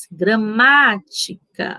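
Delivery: stressed má in gramática stretched out long. Explaining the tonic syllable in gramática: syllable má held longer. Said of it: "qual foi a sílaba que eu demorei mais? ... No má".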